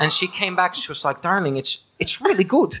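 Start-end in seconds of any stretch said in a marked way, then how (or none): 1.2-2.7 put-on Dutch accent, much higher in pitch. Quoting their mom's reaction after listening to the episodes, in a Dutch accent. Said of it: "That's a Dutch accent".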